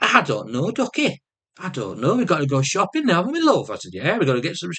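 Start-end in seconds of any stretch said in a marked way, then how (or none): 0.0-3.7 chatty, high, put-on Yorkshire accent. Retelling what she said to him, in her Yorkshire accent. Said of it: "sometimes she do a Yorkshire accent".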